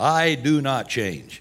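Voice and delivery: acted, firm, unwavering, slow delivery. Speaker quoting scripture, acting out God's firm voice. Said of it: "I can almost hear him say it with a firm voice".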